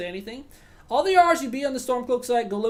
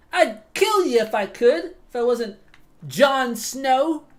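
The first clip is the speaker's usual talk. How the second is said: loud put-on British accent; 3 semitones higher, 5 dB louder than usual. In a skit, the driver answers a passenger who is storming off, British accent. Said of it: "rate my British accent".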